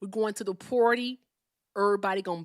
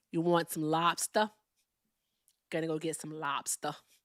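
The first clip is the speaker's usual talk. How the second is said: put-on Boston accent, done for show; 4 semitones lower, 4 dB quieter than usual. Showing off accents on request, here a boston accent. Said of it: "here's my Boston accent".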